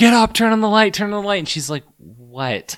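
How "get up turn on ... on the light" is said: shrill, very high yelling at full volume. Retelling what she yelled at a person lying in bed: retelling a yell. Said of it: "I'm yelling at her".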